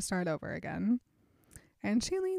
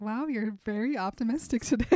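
usual speaking voice

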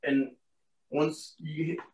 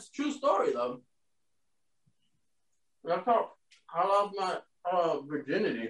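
talking with mouth full, quieter; 3 semitones higher, 5 dB quieter than usual. Answering a question about a cartoon, chewing while talking. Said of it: "I'm chewing and I'm, I'm eating".

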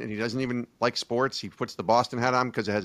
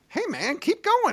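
very high, squeaky, cheering, encouraging tone. Describing the guy he would want cheering him on: high-pitched squeaky voice. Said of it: "he talks like with this really high".

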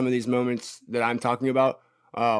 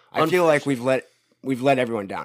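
plain

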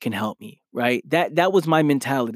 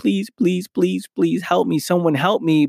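acted tearful pleading, crying and begging, higher pitch; 4 semitones higher than usual. Recalling a time of wanting change, retelling tearful pleading prayer. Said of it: "And I'm praying and crying".

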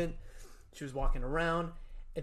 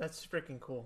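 plain

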